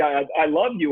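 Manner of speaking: ordinary talk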